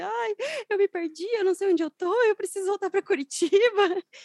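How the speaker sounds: mock tearful, very high voice through sobs. Retelling being lost and asking a delivery rider for help: imitating own past crying. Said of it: "já parei chorando, falando assim".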